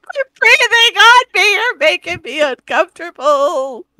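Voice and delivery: very loud, high, frantic, panicked screaming. Playing a character unnerved by something breathing above her: screaming in panic. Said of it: "She is screaming like a little girl".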